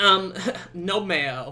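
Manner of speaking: loud, rude, snarky put-on voice. Speaker imitating a rude man's reply, put-on snarky voice. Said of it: "I don't know why I made him have that voice".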